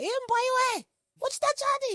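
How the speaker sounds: squeaky, very high, slow call. Recalling what the mother once called the speaker, imitating mother's squeaky voice. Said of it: "Even like a squeaky voice".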